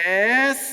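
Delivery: bright, full, high, loud and eager. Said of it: "was supposed to be like".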